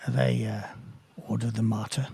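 close, leaning-in stage half-whisper. Voicing a character who leans close to ask about others: half-whispering in character. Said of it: "he comes closer still and whispers".

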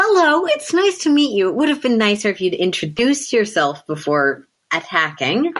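big, high, broad smiling tone. Voicing a character who greets the attacker, smiling very broadly. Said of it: "he'll just smile very, hey, broadly".

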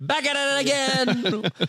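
high-pitched, slow, drawn-out delivery.

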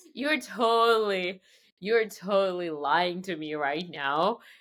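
slow, drawn-out accusing tone full of disbelief.

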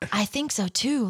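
hushed whisper. Narrator reads Lavender whispering back to Matilda during the contest, whispered back. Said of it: "Lavender whispered back".

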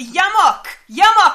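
very loud, high-pitched shout at full voice. Recounting a scene where a character calls someone out of a building, shouting a name. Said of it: "And shouts".

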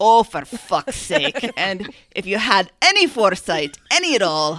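put-on slight Scottish accent. Reading aloud someone's quoted complaint, in a slight scottish accent. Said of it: "A little bit of a Scottish accent here".

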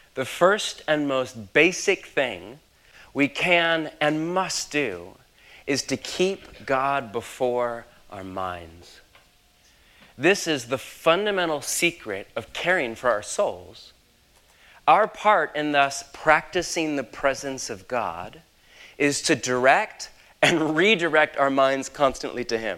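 slow, deliberate, unhurried reading, each phrase weighed. Speaker reads aloud a dense favorite quote to listeners, reading slowly. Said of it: "so I'll read it slow".

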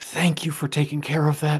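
tiny, small little voice. Game master voicing an unseen speaker the players hear, in a small voice. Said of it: "You hear a small voice go".

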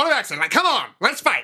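put-on transatlantic accent. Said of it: "That transatlantic voice".

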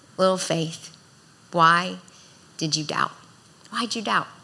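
performed sweet, loving tone. Speaking of Jesus addressing Peter, acting out Jesus in a sweet, loving tone. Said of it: "I can only hear this in a sweet, loving tone".

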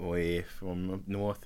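accent drifting between Canadian, Australian and Boston. Talking about fellow New Jerseyans and New Yorkers, slipping between mixed accents. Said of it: "I slipped between three different accents there".

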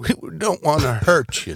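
high, swooping Midwestern twang. Retelling what Emerson said as he looked out at them, imitating Emerson's Midwest twang. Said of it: "you got to say it with Emerson's Midwest twang".

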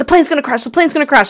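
fast, frantic, panicked, rattled-off alarm. Retelling a movie scene where a passenger panics: imitating someone freaking out. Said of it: "he starts freaking out".

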